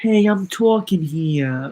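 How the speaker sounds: put-on tough-talking Brooklyn accent. Acting out their own reaction mid-discussion, the speaker cuts in with a brooklyn accent. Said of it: "like with a Brooklyn accent".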